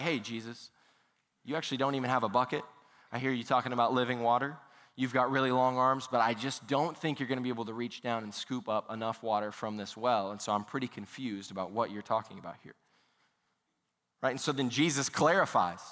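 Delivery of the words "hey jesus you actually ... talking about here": ordinary delivery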